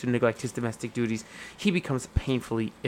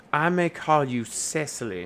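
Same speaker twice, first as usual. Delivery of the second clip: sudden, put-on American southern accent; 3 semitones higher than usual. Acting out a scene with a scene partner, in an unexpected southern accent. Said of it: "Where the fuck did the southern accent come from?".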